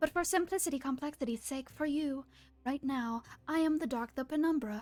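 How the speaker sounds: high voice echoing in from outside. Voicing the dark as it speaks to the players inside the hut: echoing voice of the dark. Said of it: "this voice echoes out to you from the outside".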